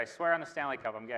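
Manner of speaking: usual speaking voice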